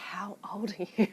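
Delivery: quiet mutter to oneself under the breath. Retelling asking a kid on stage his age: imitating muttering under breath. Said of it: "under my breath".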